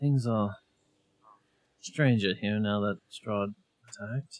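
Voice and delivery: sidelong, confiding muttered aside. Speaking in character to Kiki while not supposed to talk: under the breath. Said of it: "and under my breath".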